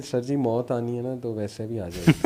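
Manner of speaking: ordinary talk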